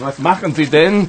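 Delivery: pretty annoyed, irritated tone. The king's doctor, as the king pulls him into the water, annoyed. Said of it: "King Ludwig's doctor is pretty annoyed".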